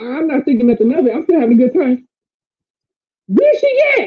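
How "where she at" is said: very high, glass-breaking shrill call. Retelling a knock at the front door, imitating a shrill mother. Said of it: "I know that shrill anywhere".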